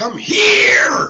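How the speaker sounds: loud, very high yell from the throat. Speaker demonstrating how sounds carry when talking really loud. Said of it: "If I talk really loud".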